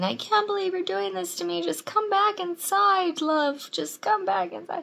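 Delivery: mock ragged yelling, very high and rough. Recounting a breakup where he followed the speaker to the car: retelling his yelling. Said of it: "he walked down the street yelling".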